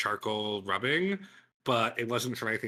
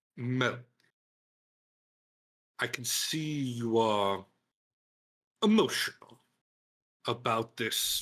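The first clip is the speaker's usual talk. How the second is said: slow, menacing, veiled, each word deliberate. Voicing Berthold answering Mel in a scene: threatening tone. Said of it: "he says with kind of, like, a threat".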